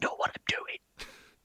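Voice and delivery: soft, breathy, hushed whisper, barely voiced. Retelling what they whispered to a companion: whispering. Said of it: "I whisper like".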